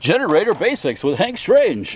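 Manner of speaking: very high, sing-song, swooping radio announcer voice. Introducing his generator basics segment: radio voice. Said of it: "my radio voice".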